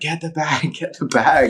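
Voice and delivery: high yell, called out again and again. Retelling holding a snake by the tail, imitating own yell to a mate. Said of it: "I'm yelling out for my mate".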